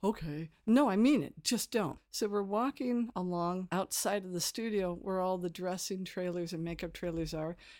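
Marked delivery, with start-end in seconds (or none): 0.0-2.0 loud, strict, stern teacher voice. Retelling escorting puppeteers past an actor: retelling own strict teacher talk. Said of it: "the whole teacher talk".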